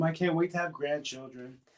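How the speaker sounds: high-pitched, soft mother's voice. Recalling what their mom always said, imitating mom's high-pitched voice. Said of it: "She has such a high pitched voice".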